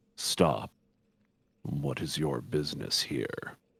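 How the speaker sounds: deep, low, grumbling guard voice. A guard confronts someone stepping into the room, in a low, grumbly tone. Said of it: "one speaks in sort of a low, grumbly tone".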